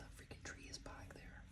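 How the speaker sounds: breathy, hushed, very quiet whisper. Pointing out a tree on a card, whispering. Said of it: "Don't know why I whispered that".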